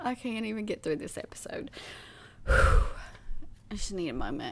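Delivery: breathy speech broken up by laughter. Trying to continue telling a story to another speaker: laughing while talking. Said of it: "I'm literally crying".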